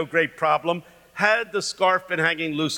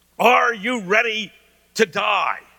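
play-acted preacher voice, yelling full tilt; 4 semitones higher, 4 dB louder than usual. Remembering sitting in church at twelve, retelling the minister's yelling.

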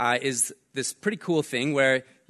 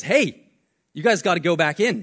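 mock loud shouted yell; 4 semitones higher, 6 dB louder than usual. Retelling a lifeguard on a jet ski ordering the group back in, retelling a lifeguard's yell. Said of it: "And he starts yelling at us".

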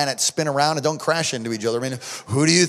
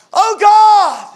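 very high, very loud cry with "God" drawn out; 11 dB louder than usual. Retelling praying over a dying son in a full room: retelling a raised-voice cry. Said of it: "lifted my voice and say".

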